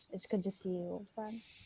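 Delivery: hushed, soft half-whisper, very close to the ear. Hugging an old friend on the ground, half-whispering in his ear. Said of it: "And I whisper in his ear".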